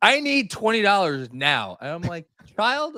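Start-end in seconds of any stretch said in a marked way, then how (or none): 0.0-1.8 high, banshee-like shrieking scream. A parent retells their daughter running up at pickup demanding money, imitating daughter screaming. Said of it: "comes up to me screaming like a banshee".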